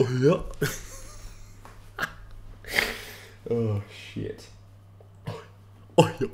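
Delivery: voice sounding like about to vomit. Showing his Goofy impression, admitting it sounds like vomiting: Goofy voice like vomiting. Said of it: "like I'm vomiting".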